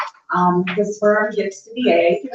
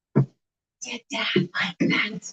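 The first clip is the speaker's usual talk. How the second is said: put-on drawn-out, slow, hushed child's whisper, close-up; 8 dB quieter than usual. Retelling a child's bedtime question: imitating a child whispering. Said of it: "he whispers in my ear".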